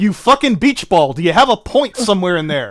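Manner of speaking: pissed off. Arguing with someone who won't get to the point, angry. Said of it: "legitimately angry and pissed off at you".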